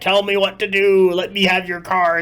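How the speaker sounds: put-on senile old man voice. Describing a game hero who hogs cards, imitating a senile old man. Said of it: "this guy has gone so senile".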